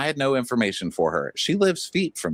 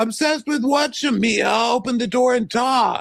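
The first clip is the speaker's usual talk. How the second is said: scream, pitched much higher; 13 semitones higher, 4 dB louder than usual. Recapping an argument through a closed door, imitating Angela screaming. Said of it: "we st- still hear Angela screaming".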